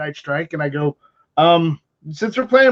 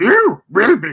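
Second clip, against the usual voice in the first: weak put-on wise-creature voice; 2 semitones higher, 3 dB louder than usual. Redoing a quoted movie line to get it right, a Yoda impression. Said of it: "Yoda had more of a menacing tone".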